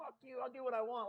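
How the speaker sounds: put-on drunk tough-guy voice. Retelling a shirtless man's reply to the manager: imitating a drunk man. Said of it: "just drunk".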